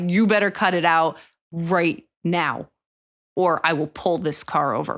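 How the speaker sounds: low, authoritative, stern tone, pitch dropped. Warning two people screaming at each other in the car, lower tone. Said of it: "my tone gets lower ... it's not said in a high voice".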